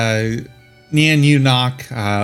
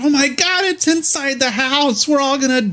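put-on panicked hollering, much higher pitch; 13 semitones higher than usual. Retelling hollering from the back of the house as food flies, retelling panicked hollering. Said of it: "you hear hollering".

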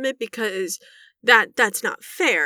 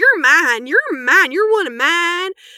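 put-on high, raised grandma voice; 8 semitones higher, 7 dB louder than usual. Retelling what grandma likes to say: imitating grandma. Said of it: "she goes".

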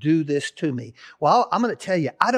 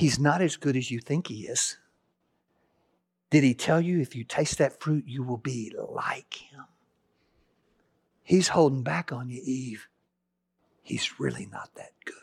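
tempting whisper, lower and quieter; 4 semitones lower, 6 dB quieter than usual. Retelling Satan tempting Eve in the garden: whispering as Satan. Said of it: "he whispers".

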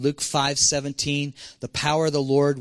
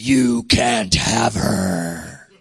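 very slow, deep, loud male demon voice; 5 semitones lower, 5 dB louder than usual. Retelling how a demon spoke through a little girl: man's voice from a little girl. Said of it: "this man's voice in perfect English".

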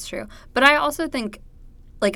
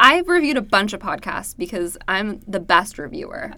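plain

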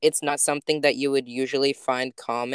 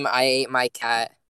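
usual speaking voice

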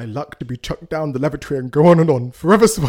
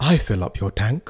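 put-on posh accent, much lower pitch; 5 semitones lower, 4 dB quieter than usual. Acting out a two-person exchange as Charles, in a posh RP accent. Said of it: "try and speak like a posh... RP".

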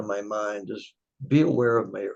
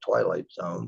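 normal talking voice

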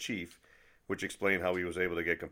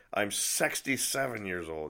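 imitated drunk voice of an old man; 2 semitones higher than usual. Retelling what an old guy, Peter, said every year, imitating Peter drunk. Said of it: "always in his drunk voice".

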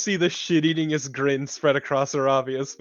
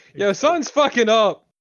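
loud, raised, hollered yell; 7 semitones higher, 6 dB louder than usual. Playing a character who is climbing in a game: yelling very loudly. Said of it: "she yells out very loudly".

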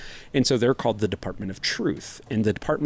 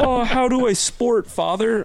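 put-on very high, slow, geeky nerdy kid voice; 14 semitones higher, 5 dB louder than usual. Mocking own fumble as a child asking a dad, mock nerdy kid voice. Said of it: "whiffed like a nerd".

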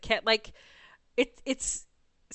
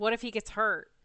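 normal talking voice

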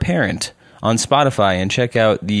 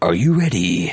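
deep, dramatic movie-trailer narrator voiceover; 4 semitones lower than usual. Retelling talking to the girlfriend while getting ready: movie voiceover voice. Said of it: "the voiceover for movies".

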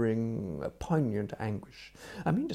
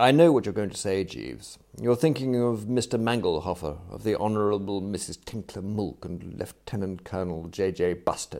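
plain reading voice

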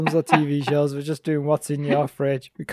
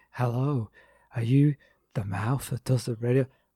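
put-on creepy phone voice, lower and quieter; 4 semitones lower, 8 dB quieter than usual. Acting out her phoning every listed man with that name; imitating a creepy caller. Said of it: "Sent shivers down me".

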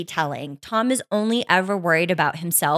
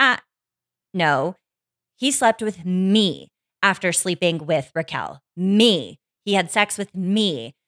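ordinary delivery

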